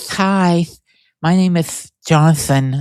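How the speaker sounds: slow speech with thick lisp and lots of breath. Describing a guy who was so lispy, imitating a lispy breathy voice. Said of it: "he was he was so lispy".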